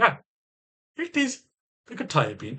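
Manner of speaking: put-on lilting, swooping, sing-song Jamaican-sounding accent. Retelling his words again, sounding like Eddie Murphy in Coming to America. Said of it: "I sound like fucking Eddie Murphy coming to America".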